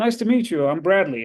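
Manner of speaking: put-on casual delivery with a Texan accent. Retelling meeting Bradley Cooper, who introduces himself in a Texan accent. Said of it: "And like with a Texan accent".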